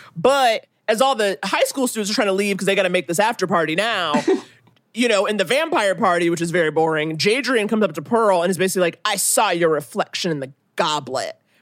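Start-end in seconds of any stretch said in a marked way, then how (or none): 9.1-11.4 low, pointed, dramatic delivery. Recapping a vampire party scene, the speaker quotes one character's line, retelling it loudly. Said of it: "And he says it like real loud".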